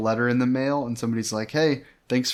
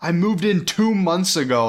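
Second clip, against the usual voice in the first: put-on high-pitched, complaining yell; 7 semitones higher, 4 dB louder than usual. Retelling what a game villager yelled: imitating a villager yelling. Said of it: "she yelled".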